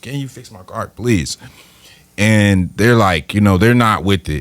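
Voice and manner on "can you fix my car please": imploring, pleading, begging voice. Retelling a dream of asking mechanics to fix the car: imitating begging. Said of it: "Just begging them".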